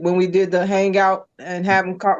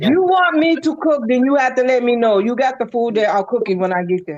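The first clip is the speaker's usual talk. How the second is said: Jamaican accent slipping out in the speech; 4 semitones higher than usual. Answering a request to cook for the others: Jamaican accent coming out. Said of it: "her Jamaican accent then came out".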